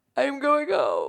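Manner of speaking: exaggerated dramatic voice. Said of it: "just being super dramatic".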